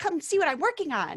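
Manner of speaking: very high, eager, bubbly, excited voice. Showing how the character Wolf talks: excited Wolf voice. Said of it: "it would just be so excited like this".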